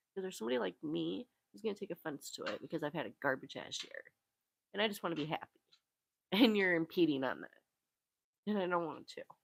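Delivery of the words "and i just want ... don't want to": slow speech through tears. Speaker venting after a garbage year, crying while talking. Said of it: "I didn't mean to start crying again".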